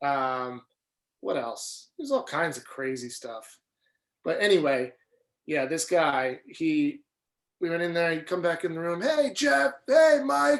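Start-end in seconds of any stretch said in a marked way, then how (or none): 9.0-10.6 very high, stretched-out, drawn-out scream. Recounting a guy who came back in the room screaming at them, imitating a man screaming. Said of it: "just screaming at us".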